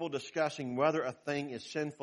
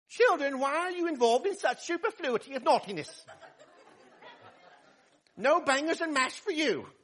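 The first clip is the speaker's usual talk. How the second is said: very high-pitched, scolding British nanny voice; 12 semitones higher, 4 dB louder than usual. Speaker imagines a nanny walking into a room of children, British nanny voice. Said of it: "that sounds like a British nanny".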